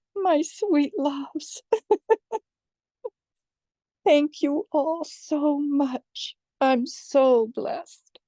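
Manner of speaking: tearful, weeping voice. The speaker thanks her darlings, crying. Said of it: "The tears are just flowing".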